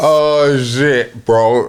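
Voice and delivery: talking through laughter. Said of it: "Why are you laughing?".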